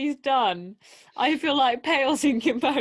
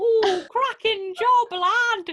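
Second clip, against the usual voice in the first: every word stretched, high-pitched character voice; 9 semitones higher, 3 dB louder than usual. Imagining a pirate's taunt: Wallace from Wallace and Gromit voice. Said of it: "I'm imagining it like Wallace from Wallace and Gromit".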